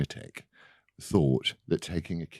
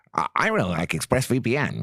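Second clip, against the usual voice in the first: rusty put-on voice, high, swinging slowly; 5 semitones higher, 3 dB louder than usual. Asking for a VPN sponsor, then doing a Ben Shapiro impression. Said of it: "That was my Ben Shapiro impression".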